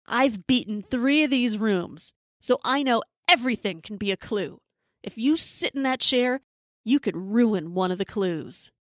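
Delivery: ordinary talk, nothing marked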